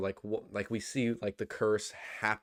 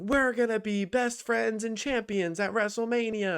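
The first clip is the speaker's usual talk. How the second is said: put-on piercing, shrill, very high-pitched screaming; 12 semitones higher, 4 dB louder than usual. Retelling a wrestler's backstage segments: imitating Lyra Valkyria screaming. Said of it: "screaming at her".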